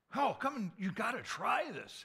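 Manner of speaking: shrill, booming, very loud, high sing-song enthusiasm. Acting out someone urging others to try a food sample, mock-enthusiastic. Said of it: "they're very vocally enthusiastic about".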